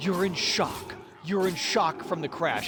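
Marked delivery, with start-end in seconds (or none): none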